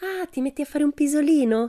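affectionate voice. Pippi speaks just before climbing down off an animal's back; lovingly. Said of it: "disse Pippi amorevolmente".

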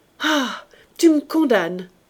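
violent, cutting-in outburst. Narrator reads a man cutting off the other speaker, interrupting violently. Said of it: "interrompit-il violemment".

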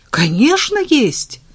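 enthusiastic, eager, high-pitched exclamation. A man answers a woman's question on the phone, exclaiming with enthusiasm. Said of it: "с энтузиазмом воскликнул Женя".

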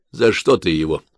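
ordinary delivery

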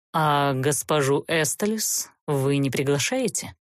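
pointed, caustic, barbed, needling tone. A count, invited to sit and dine, asks his host: barbed, needling question. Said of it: "колко осведомился граф".

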